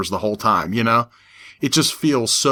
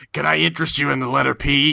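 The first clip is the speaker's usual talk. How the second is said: put-on puppet voice, pitched higher; 3 semitones higher than usual. Imitating the Sesame Street Muppet in a trench coat. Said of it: "like he said".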